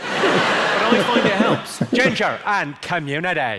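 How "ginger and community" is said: Northern Irish Belfast accent, stretching "community". Showing the phrase used to get the Belfast accent right. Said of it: "the phrase I use to get the Belfast accent right".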